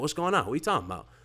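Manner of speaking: mock shocked reaction. Retelling his own reply during a live podcast: imitating his own shocked reaction. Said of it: "I'm shocked".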